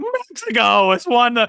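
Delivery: put-on cracking teen voice, very high and very slow. Retelling a line he once blurted out, in a pimply-faced kid voice from The Simpsons. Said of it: "I sounded like the pimply faced kid from The Simpsons".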